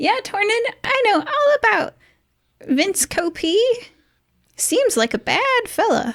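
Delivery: put-on very high voice of a tiny old man. Voicing an elderly man behind a desk, speaking to tornin: high old man's voice. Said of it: "the high old man's voice says".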